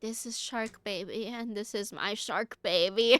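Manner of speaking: put-on drunk voice. Retelling what a friend said while drunk: imitating a drunk friend. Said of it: "came over really drunk".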